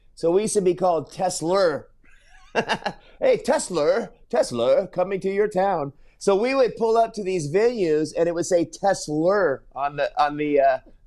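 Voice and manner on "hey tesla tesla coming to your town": put-on British accent with an added r sound. Recalling the British guy who managed you and how he said your name, imitating his R-adding British accent. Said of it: "a British guy, and he always, with his accent, would add an R to it".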